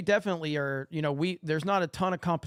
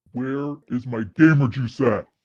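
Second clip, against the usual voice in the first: mock male voice, lower and louder; 4 semitones lower, 8 dB louder than usual. Performing a viewer-requested line in a put-on man voice. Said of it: "do her man voice".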